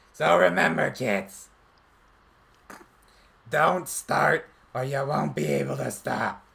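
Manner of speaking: rough, strained voice pushed from the throat. Performing an anti-drug PSA as an encore: Smoker Toad character voice. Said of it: "repeat the Smoker Toad line".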